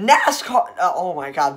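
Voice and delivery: voice breaking on one word. Speaker explaining Dodge's NASCAR history, voice cracking. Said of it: "big voice crack there".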